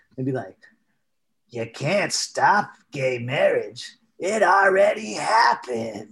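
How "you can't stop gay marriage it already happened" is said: slow, drawled, sinister villain voice. Retelling a quote from an ad campaign: Gavin Newsom villain voice. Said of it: "that fucking villain voice".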